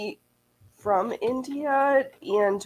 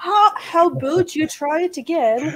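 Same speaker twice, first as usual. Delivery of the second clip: worst Canadian accent attempt, higher; 7 semitones higher, 4 dB louder than usual. Joking about a sewing machine that says try again: bad Canadian accent. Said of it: "that was my worst Canadian attempt at a boot".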